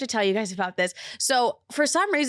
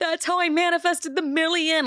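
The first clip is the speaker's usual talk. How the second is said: put-on blubbering through tears, high, bawling; 7 semitones higher than usual. Retelling a FaceTime call with Livia, imitating herself bawling her eyes out. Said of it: "I'm bawling my eyes out".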